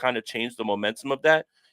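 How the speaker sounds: ordinary talk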